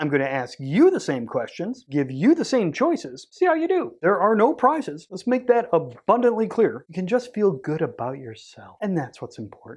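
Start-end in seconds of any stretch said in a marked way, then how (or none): 6.9-9.8 soothing, calm counseling-session therapist voice. A host quizzing listeners on podcasting questions: therapy voice. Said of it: "that's my therapy voice".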